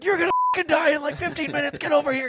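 high, loud, panicked yelling.

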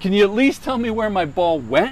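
acted male yell. Retelling one of the guys calling to the old man, retelling a yell. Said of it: "the one guy yells".

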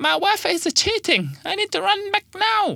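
put-on high, swooping, sing-song voice in a Chinese accent. Voicing the park ranger answering his boss, Lin in a Chinese accent. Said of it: "I'm going to do a Chinese accent now".

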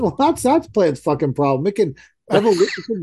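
put-on yelling. Retelling a phone call to a designer about moving plants: retelling screaming at someone. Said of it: "Screaming at her".

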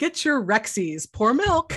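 tv commercial announcer voice. Joking with a guest that the title sounds like a cartoon, as a kids' cereal commercial announcer. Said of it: "you'd be selling, like you know, breakfast cereal".

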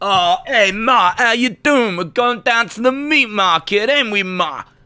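put-on Italian-American accent, pitched high. Telling a friend about an NXT wrestler and how he talks: Tony D'Angelo Italian-American voice. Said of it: "That's how he talks".

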